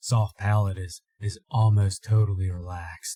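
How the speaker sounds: deep, low whisper. Demonstrating a vocal effect step by step, in a deeper whisper. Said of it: "just going a little bit in that deeper whisper".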